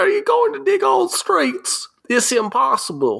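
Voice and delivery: faked Southern accent in a very high voice. Acting a line in an improvised scene, in a put-on southern accent. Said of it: "it always ends up changing to like the southern accent".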